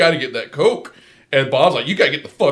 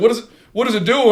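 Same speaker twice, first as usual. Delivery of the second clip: high, frantic, bewildered, freaked-out voice; 8 semitones higher than usual. Retelling a movie scene where a character is freaking out: imitating Eddie freaking out. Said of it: "Eddie's freaking out".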